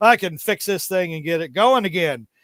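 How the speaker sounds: ordinary talk, nothing marked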